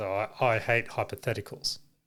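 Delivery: put-on muttering. Retelling what another speaker said: imitating muttering under breath. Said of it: "Under his breath, he goes".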